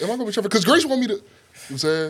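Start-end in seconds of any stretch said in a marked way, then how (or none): 0.0-1.1 rushed, raised, rattled-off delivery. Speaker retells asking the coach before the first game: said fast. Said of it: "I said it fast".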